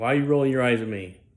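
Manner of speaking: mock irate, angry preacher voice. Retelling what a preacher said to the speaker: imitating an angry preacher. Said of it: "he got very angry with me".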